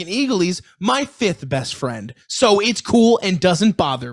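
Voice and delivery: put-on naive, guileless, high, sing-song childlike voice. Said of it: "childlike carrying on innocent voice".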